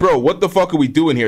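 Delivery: plain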